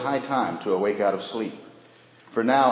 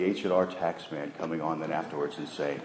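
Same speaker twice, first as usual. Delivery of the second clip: ordinary talk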